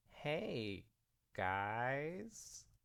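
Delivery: embarrassed, sheepish, with a drawn-out end. Reading a story aloud as Sunset, caught by friends: sheepish grin. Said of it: "Sunset grinned sheepishly".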